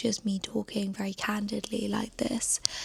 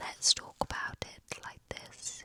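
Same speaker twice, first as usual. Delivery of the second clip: soft, hushed whispered delivery. Trying out voice options for a long session, in a whisper. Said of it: "Or I could do whisper".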